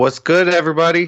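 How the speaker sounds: sounding way too happy, very cheerful. Greeting everybody at the start of a podcast, sounding way too happy. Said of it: "you sound way too happy".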